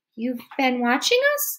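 dry-mouthed, struggling to speak. The narrator, mouth suddenly gone dry, asks a question, dry-mouthed and struggling to speak. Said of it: "so much that I had trouble speaking".

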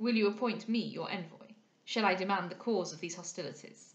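plain reading voice

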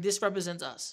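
ordinary talk

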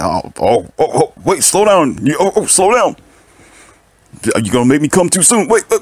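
put-on fast, high, flustered, overeager, overexcited babbling man. Acting out the man's reply to the girl: imitating an overexcited man. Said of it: "You're like".

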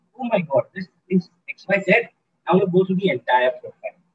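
ordinary talk

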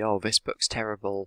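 plain

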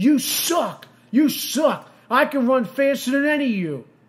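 high, taunting, heckling half-yell. Speaker quotes a guy at last week's football game: retelling a guy's yell. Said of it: "a guy was yelling".

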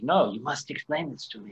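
put-on European accent. Imagining how a European might say this, the speaker uses a European accent. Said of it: "I could see someone in a Euro accent be like".

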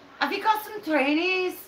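clumsy put-on scouse accent, high, bad Liverpool. Showing another person how to say it, in a bad Liverpool accent. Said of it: "Just say, hey, I'm from Fazakala".

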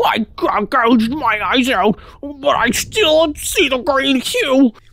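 slow, mushed words, mouth barely working. Voicing a man who gouged his eyes out: voice unable to use his mouth. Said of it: "make the voice like he can't fully use his mouth".

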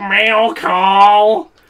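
put-on nasal voice. Joking about how they imagine a Mario character sounds, the speaker does a dorky nasal Bear Carry voice. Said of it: "a really dorky, like, loud, like, nasally voice".

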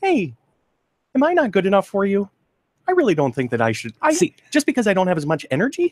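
very high, swooping cartoon dog voice. Asked to go back to it, voicing a pet dog: doggy voice. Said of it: "Go back to your doggy voice".

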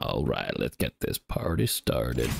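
put-on American accent. Starting a game round, slipping into a put-on american accent. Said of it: "I don't know why I'm going American".

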